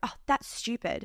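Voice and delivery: dismissive, brushing-off, scoffing put-down tone. Imitating how most women answer what a man says: imitating a dismissive put-down. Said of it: "Most women, when a man says whatever he says, will go".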